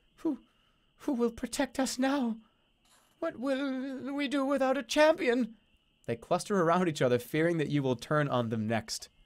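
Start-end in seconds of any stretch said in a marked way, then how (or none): 0.2-5.6 very high, fretful, worried little goblin voice. Narrator voicing a long-tongued goblin as the other mutants back away, worried goblin voice. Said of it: "The long-tongued goblin rubs her hands with worry".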